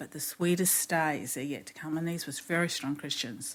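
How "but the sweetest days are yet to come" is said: normal talking voice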